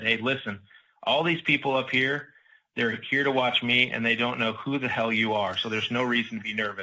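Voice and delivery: ordinary talk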